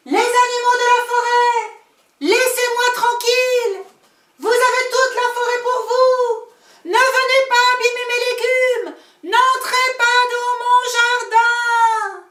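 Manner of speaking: high-pitched shout at full force. Narrator reading the little old grandmother shouting to the forest animals; shouting with all her strength. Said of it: "C'est l'histoire d'une petite vieille femme qui habitait à l'écart du village, / C'est l'histoire d'une petite vieille femme qui habitait à l'écart du village, dans la forêt. Elle habitait dans une pe".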